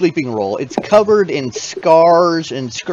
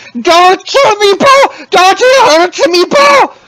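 frightened creature shouting, higher and louder; 8 dB louder than usual. Voicing a frightened little creature pleading in Draconic: terrified creature yelling. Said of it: "this little creature is yelling".

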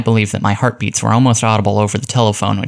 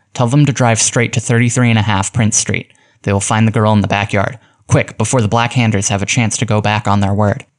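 plain

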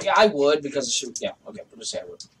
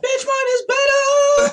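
piercing, shrill, very high scream; 7 dB louder than usual. Getting into a screaming contest, the speaker goes shrill. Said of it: "So I'm going to just shrill up".

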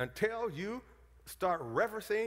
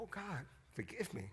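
imitated weeping, much quieter than normal; 2 semitones higher, 11 dB quieter than usual. Retelling his prayer to the Lord, retelling his own weeping. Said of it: "And I wept like Peter".

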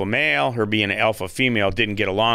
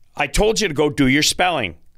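harsh, aggressive, stern tone, pitched up; 5 semitones higher than usual. Retelling how the dad ordered him to do spelling: imitating a stern aggressive dad. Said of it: "got really stern with me and said".

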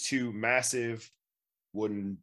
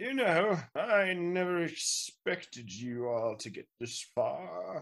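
put-on slow, high-pitched, centuries-old wizard character voice; 8 semitones higher than usual. Game master voicing a centuries-old wizard to the players, in a centuries-old wizard character voice. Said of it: "I am a hundreds of year old wizard".

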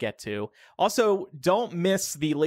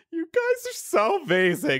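put-on very high, drunken gushing voice; 10 semitones higher than usual. Recall Laura addressing the listeners after recording, imitating drunk Laura. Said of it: "she was that drunk where she was going".

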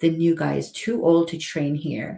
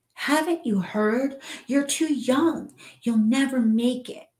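shrill, high, screamed-out voice; 9 semitones higher than usual. Narrating a first-person story, the narrator screaming at a kid off his porch. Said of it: "I scream".

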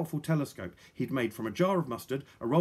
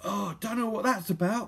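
words forced through clenched teeth, pitched up; 7 semitones higher than usual. Narrator reads a character's line as she kneels in agony, through gritted teeth. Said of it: "said Polly through gritted teeth".

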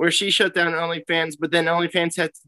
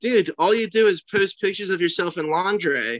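normal talking voice

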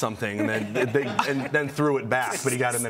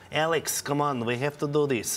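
put-on Eastern European accent, urging tone. Recalling friends' parents heard in the kitchen growing up, mimicking a friend's parent. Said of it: "mimicking their parents growing up, just being in the kitchen and hearing them go".

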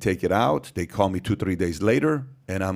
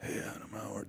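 faint whisper, barely getting words out; 17 dB quieter than usual. Retelling six months with a lost voice: imitating a lost voice, struggling to talk. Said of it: "So I'm talking like this".

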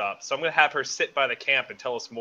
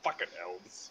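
hushed, whispered grumbling mutter under the breath; 6 semitones lower, 13 dB quieter than usual. A player voicing their dwarf character in a game, mumbled under breath. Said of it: "Under my breath, I'm going to mumble a dwarvish".

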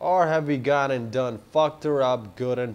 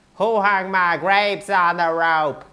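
exaggerated, high, loud nasal put-on voice; 6 semitones higher, 7 dB louder than usual. Speaker trying out someone's funny line themselves, nasal put-on voice. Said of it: "Maybe it needs a more nose or something".

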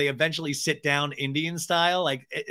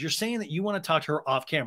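normal talking voice

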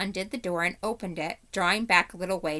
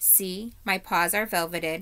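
plain

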